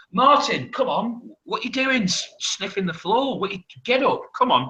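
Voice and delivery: put-on, very high yelling shout. Retelling guys in a pub shouting at martin: imitating someone shouting. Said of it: "be shouting like".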